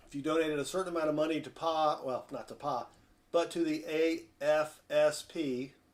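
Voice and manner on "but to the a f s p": very slow, deliberate, each word drawn out. Speaker correcting an acronym for a listener, saying it very slowly. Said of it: "I got to say that really slowly".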